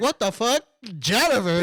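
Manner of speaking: plain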